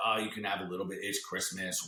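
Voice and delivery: ordinary talk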